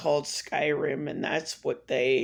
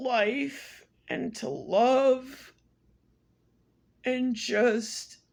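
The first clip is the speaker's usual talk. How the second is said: crying through the words, high and tearful, love drawn out; 9 semitones higher than usual. Telling of a phone call bringing news of a grandfather's death, crying while talking. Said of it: "This is the first time I'm crying".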